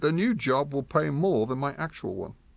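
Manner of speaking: usual speaking voice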